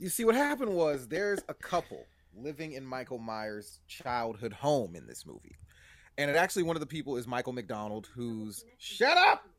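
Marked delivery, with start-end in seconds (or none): 8.8-9.4 very high, shrill, loud shouted yell. Telling a story when a smart speaker interrupts: yelling. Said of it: "who are you yelling at?".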